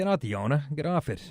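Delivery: plain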